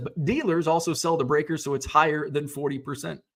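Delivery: ordinary talk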